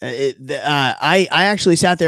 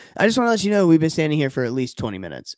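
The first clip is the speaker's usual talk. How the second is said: ordinary delivery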